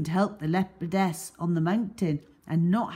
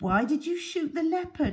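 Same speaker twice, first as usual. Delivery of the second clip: tiny, small voice; 10 semitones higher than usual. Reading a story, voicing a character asking a bearded man in a tiny voice. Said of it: "Ali asked in a tiny voice".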